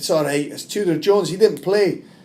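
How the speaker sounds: put-on loud, high-pitched Scottish accent. Retelling what a fan said as he walked out, in a Scottish accent. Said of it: "in a Scottish accent".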